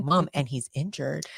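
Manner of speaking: ordinary delivery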